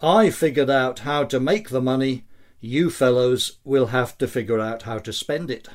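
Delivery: ordinary talk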